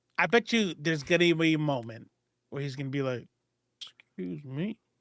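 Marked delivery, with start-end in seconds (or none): 4.2-4.8 very quiet, hushed mutter under the breath. Imagining how a character will say a line in the film: said low under his breath. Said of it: "low under his voice".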